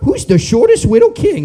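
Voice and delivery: sarcastic, high, sing-song teasing mockery. Retelling what women overheard at a meeting say: mocking imitation of women. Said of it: "they go".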